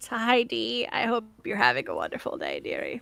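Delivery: put-on swooping, sing-song little old lady voice. Greeting a listener, slipping into an old woman voice. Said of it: "I've turned into an old woman".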